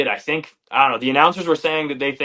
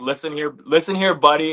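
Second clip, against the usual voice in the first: ordinary talk, nothing marked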